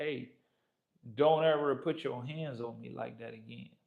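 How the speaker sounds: composed, steady, soft, calm tone. Retelling a warning given amid commotion: retelling a quiet, calm warning. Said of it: "very quietly, very calmly".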